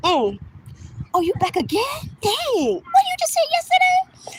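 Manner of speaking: very high, swooping, sly teasing wisecrack. Retelling a remark said to people watching late: slick joking remark. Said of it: "I'll say things like that".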